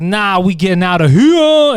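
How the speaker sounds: loud, slow delivery. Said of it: "He's like".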